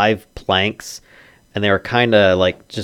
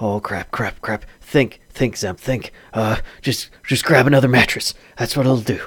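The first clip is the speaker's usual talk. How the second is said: exasperated, frustrated thinking out loud; 3 semitones higher than usual. Voicing a frustrated man behind a door, speaking to himself: frustrated muttering to himself. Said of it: "a voice sounds very frustrated, like, speaking to himself".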